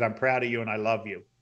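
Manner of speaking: ordinary talk, nothing marked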